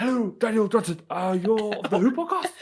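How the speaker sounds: put-on failed, unconvincing Welsh accent, pitched high and loud. On a Doctor Who podcast, greeting a co-host in a bad Russell Welsh accent. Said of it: "That's not even Welsh".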